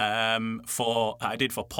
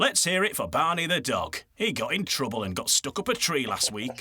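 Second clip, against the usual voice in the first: put-on Yorkshire accent; 3 semitones higher than usual. Showing a line from the pet radio ads: yorkshire accent. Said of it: "with my Yorkshire hat on".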